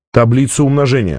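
ordinary delivery, nothing marked

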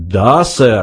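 through clenched teeth. Old man answers after being coldly dismissed, said through gritted teeth. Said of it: "процедил старец".

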